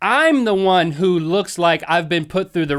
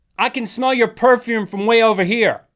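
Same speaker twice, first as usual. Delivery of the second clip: projected call-out with raised pitch; 5 semitones higher than usual. Retelling what the speaker's wife heard in a store aisle, very loud voice. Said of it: "in a very loud voice".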